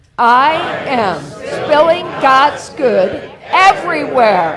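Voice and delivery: very slow, earnest, heartfelt conviction. Leading a group to repeat a phrase again, properly this time, with conviction. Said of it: "Let's say it like we mean it".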